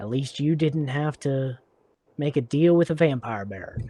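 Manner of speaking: muttered quietly under breath. Voicing a character who walks away and gets his stuff: muttered under his breath. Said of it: "he says under his breath".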